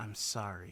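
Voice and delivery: muttered under breath. Retelling what a woman said to you before walking away, muttered under her breath. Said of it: "says something under her breath".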